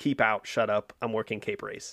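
ordinary delivery

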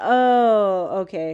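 put-on disappointed, let-down tone. Retelling hearing the woman he likes wants a group hangout, acting out past disappointment. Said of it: "And I was disappointed".

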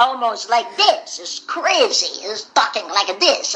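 put-on heavy Russian accent. Describing how Gendy talks, imitating Gendy's thick accent. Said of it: "He talks like".

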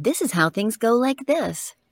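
small, modest announcer-style delivery. Describing an earlier kind of read, demonstrating it in a small announcer voice. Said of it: "Which is like small announcer voice".

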